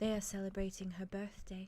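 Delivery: very soft, hushed voice. Voicing a woman the players hear speaking, very soft voice. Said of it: "before you hear her very softly say".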